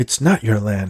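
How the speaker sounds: usual speaking voice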